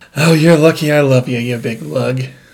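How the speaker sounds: put-on character voice, affectionate and scolding. Retelling how Nikki reacted to a long aside: imitating Nikki. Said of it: "That's my impression of Nikki".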